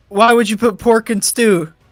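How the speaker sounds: screaming in a character voice. Voicing a character who begins screaming at the party: character screaming. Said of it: "he just begins screaming".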